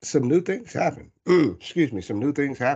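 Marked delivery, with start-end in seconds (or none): 0.0-1.1 voice cracking, jumping high mid-phrase. Sharing what happened over the summer, voice cracking. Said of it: "voice crack".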